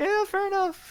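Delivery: mock reluctant, squeaky voice pitched way up high.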